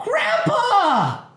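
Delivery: put-on very high, loud, excited child squeal. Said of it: "and she's so excited".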